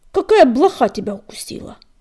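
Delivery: very loud, furious, snarling growl. Narrator voices a character scolding another whose yells keep everyone awake: angry growl. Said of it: "сердито рыкнул дым".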